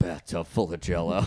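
full gravel, low, utterly straight-faced tone. Imitating a man saying it very seriously, imitating his dead-serious gravel. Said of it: "Just full gravel in his tone, too, as he's just like".

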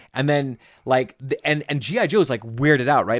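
ordinary talk

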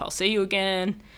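normal talking voice

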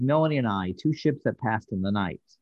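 normal talking voice

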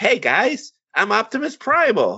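put-on wimpy, very high, squeaky kid voice. Retelling a new Beast Wars show, quoting its lead character: childlike Optimus Primal voice. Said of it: "He literally sounded like a child".

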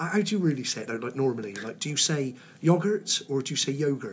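ordinary talk

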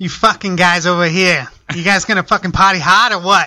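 put-on Boston accent. Taking a turn showing off accents, speaker does a boston accent. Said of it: "It's a Boston accent".

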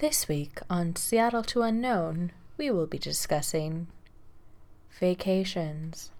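gentle, soft radio-host style delivery. Mock show intro about vacations, in an NPR voice. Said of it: "We need to switch into our NPR voices".

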